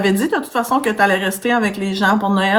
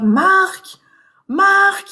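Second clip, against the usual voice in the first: put-on, very high, panicky yell; 10 semitones higher than usual. Telling how a woman panicked on a livestream, calling for Marc: imitating her panicked shouting. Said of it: "elle criait".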